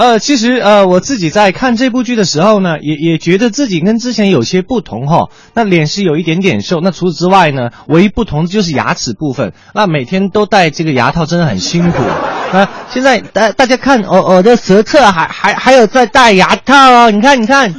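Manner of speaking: Taiwanese accent impression.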